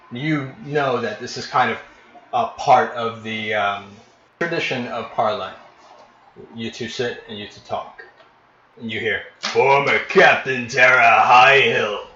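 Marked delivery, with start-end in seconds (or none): 9.4-11.9 loud, bellowing giant voice. The Goliath announces the arrival of a former captain by name: bellowing Goliath voice. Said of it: "the Goliath bellows".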